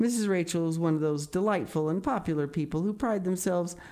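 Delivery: plain reading voice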